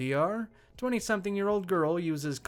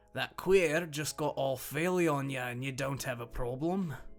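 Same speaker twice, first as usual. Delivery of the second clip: bad, badly done put-on Scottish accent; 4 semitones lower than usual. Retelling a man's complaint to you, in a bad scottish accent. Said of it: "I apologize for how terrible this accent is".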